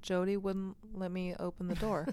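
ordinary delivery

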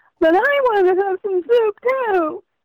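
very high-pitched, drawn-out, whiny storybook voice. Describing how to read a story about a whining rabbit aloud, in a whiny voice. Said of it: "read in a nice whiny voice".

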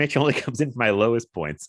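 words breaking up with hard laughter throughout. Reacting to another speaker's joke about a low point: laughing hard while talking. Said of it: "I'm laughing so hard".

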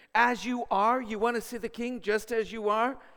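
high, loud sneer.

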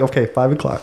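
plain

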